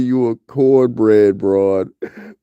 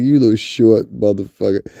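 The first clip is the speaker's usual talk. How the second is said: normal talking voice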